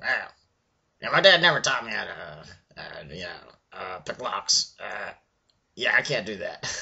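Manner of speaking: tiny, little goblin character voice. Retelling playing a rogue, the speaker answers the other players in a little goblin voice. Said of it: "I just talked in a little goblin voice the whole time".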